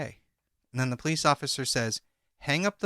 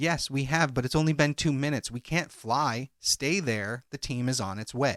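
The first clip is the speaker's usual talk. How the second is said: usual speaking voice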